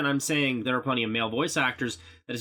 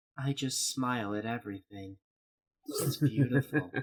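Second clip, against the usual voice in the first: put-on emotionless voice, quieter; 5 dB quieter than usual. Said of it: "She just sounds like this".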